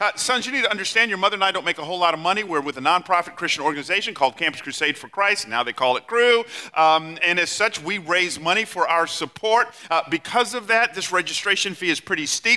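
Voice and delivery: ordinary talk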